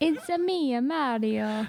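put-on Italian accent. Asked for something to say in an Italian accent, offering an example: Italian accent. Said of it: "give me something to say with an Italian accent".

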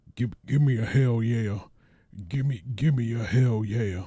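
high rousing call. Opening a podcast episode with an impression: Stone Cold Steve Austin voice. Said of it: "it's clearly my impression of Stone Cold Steve Austin".

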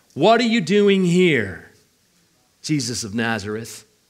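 put-on snarky, mean, sneering tone. Voicing a demon telling Jesus to leave: imitating a snarky, mean tone. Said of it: "a snarky, mean way of saying".

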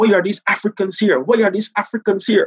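put-on policeman voice, high, screaming shout at full lung. Retelling how a policeman shouted at the group, imitating a policeman screaming. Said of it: "he's screaming at the top".

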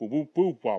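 muffled, muted trombone-like wah-wah babble.

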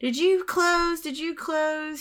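loud high-pitched yelling. Retelling a worker calling to a sweeping attendant across the subway: imitating Marge yelling. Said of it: "She's yelling at him from across the subway".

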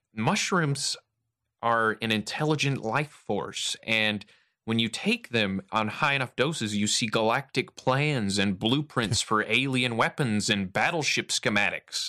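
slow, drawn-out, effeminate, prim and brainy voice. Imitating McKenna describing mushrooms: effeminate eggheady McKenna voice. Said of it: "very effeminate and eggheady".

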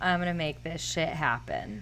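normal talking voice

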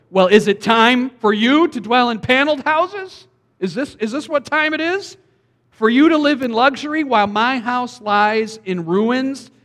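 mock, very sarcastic, slow questioning tone. Reading the Lord's reply to the people's excuses aloud: acting out sarcastic reply. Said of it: "he's very sarcastic here".

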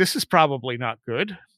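ordinary delivery

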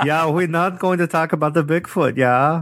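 bad, put-on, high-pitched German accent. Acting out what the report writers said: crappy german accent. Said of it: "in my crappy German accent".

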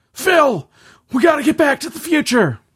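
badly done, very high-pitched, loud squealed exclamation. Talking with someone about Back to the Future, throw in a bad Doc Brown impression. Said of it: "That was the worst Doc Brown impression ever".

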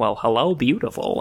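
creepy, menacing, slow-burning villain voice. Recalling a movie scene where the Joker approaches Rachel: creepy Joker voice. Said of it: "the Joker is just, like, approaching, uh, Rachel or whatever, and he's like".

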